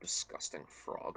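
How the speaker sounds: muttered under breath as an aside. A player speaks their character's line in the scene, muttered under breath. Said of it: "Under my breath".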